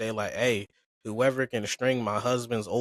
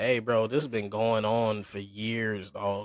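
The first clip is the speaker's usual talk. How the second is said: ordinary talk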